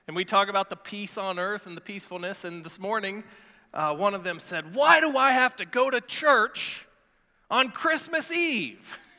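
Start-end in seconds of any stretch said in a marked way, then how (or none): 4.7-8.9 mock sulky foul mood, slow and grumpy. Retelling what one of them asked this morning, mimicking a foul-mood complaint. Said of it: "they were kind of in a foul mood".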